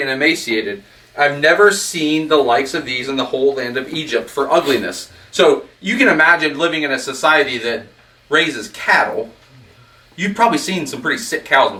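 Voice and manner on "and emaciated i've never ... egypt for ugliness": ordinary delivery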